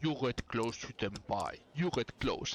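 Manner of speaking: super deep commentator voice. Imitating the commentator in a game's English version, super deep commentator voice. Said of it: "it's like a super deep voice".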